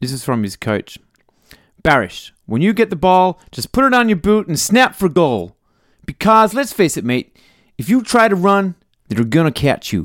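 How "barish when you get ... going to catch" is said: terrible put-on American accent, pitched up. Reading out an old coach's report about a footballer, in a bad American accent. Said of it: "Worst American accent in the history".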